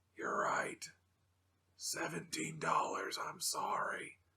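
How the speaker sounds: put-on dry voice. Retelling a phone call from a shop clerk: imitating a dry voice. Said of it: "that same dry voice".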